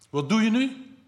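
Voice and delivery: sudden, very high cry of terror. Read the line of a frog just stung by the scorpion he carries, crying out in sudden mortal fear. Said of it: "Riep de kikker in plotselinge doodsangst".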